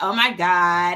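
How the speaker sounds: put-on Valley Girl accent. Trying out a Valley Girl voice for the others: put-on Valley Girl voice. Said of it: "like the Valley Girl".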